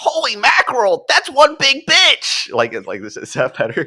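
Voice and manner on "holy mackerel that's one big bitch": over-the-top, exaggerated nerdy voice, very high-pitched. Repeating a nerdy film character's line on request: exaggerated nerdy character voice. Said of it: "line by the nerdy character one more time".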